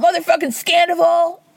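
mock hollered outburst, high-pitched and sudden. Retelling a reality show scene where someone spins, imitating someone yelling.

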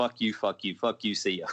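ordinary delivery

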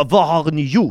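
loud, barked, bad Russian accent slipping into French. Retelling a scene where Igor Karkaroff arrives, in a bad Russian accent. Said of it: "Nu blir jag fransk Hur fan hur pratar man ryska?".

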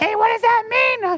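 very high put-on voice of a woman smoker. Speaker acts out wives asking their husbands a question, in a smoker lady voice. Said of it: "That's my lady voice. She's a smoker".

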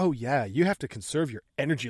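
put-on biting, bitchy, snide, super sarcastic tone. Retelling a film character's reply to another character: imitating someone being super sarcastic. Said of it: "she's super sarcastic and bitchy to him".

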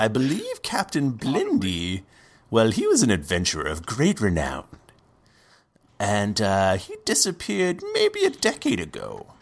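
odd, swooping, really different put-on character voice. In a role-play, a character answers after being slid a gold piece, in a put-on voice. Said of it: "my voice got real different".

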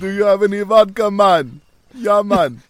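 loud, high put-on Jamaican accent with Russian tinge. Imagining a big Russian dude, the speaker acts him out: Russian guy doing Jamaican accent. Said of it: "big Russian dude ... starts speaking in a Jamaican accent".

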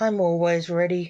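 ordinary delivery

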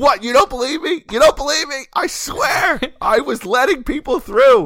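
shrill, very high repeated yelling. Recounting an argument with a man who didn't believe them, retelling own yelling. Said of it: "So I kept yelling at him".

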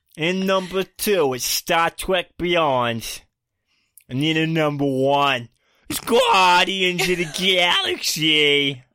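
put-on New York American accent. Counting down a list of movies in a put-on american accent. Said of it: "the hardest American accent to do".

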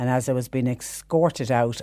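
normal talking voice

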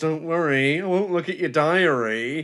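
slow, creepy, unsettling, "diary" drawn out. Retelling a neighbour's line in a show, imitating a character going creepy. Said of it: "suddenly goes all creepy and goes".

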